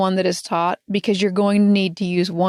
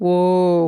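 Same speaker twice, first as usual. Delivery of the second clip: low, deep, drawn-out whoa. Using the voice for when the kids are in trouble: deep, low "whoa". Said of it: "you want to say it deep and low ... It's got to be this deep".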